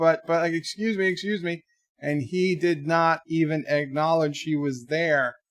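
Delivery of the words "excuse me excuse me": courteous, very polite voice, pitched up. Retelling a neighbor chasing the garbage man: imitating someone yelling politely. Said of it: "being very nice".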